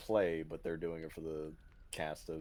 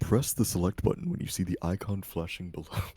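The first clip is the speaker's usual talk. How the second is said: deep narrator-style announcer voice; 2 semitones higher, 10 dB louder than usual. Describing how game tutorials explain controls, the speaker mimics them: deep Catherine announcer voice. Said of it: "they get like the deep voice".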